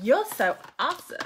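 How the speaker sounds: bad, terrible put-on American accent. Sending a message to a viewer who shared, bursting into a terrible American accent. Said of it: "I just burst into an American terrible accent then".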